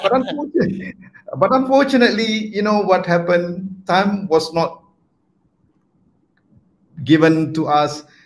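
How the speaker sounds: emotional, choked-up voice heavy with feeling. Speaking about a radical change in schooling that was started: emotional. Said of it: "sorry, a bit emotional".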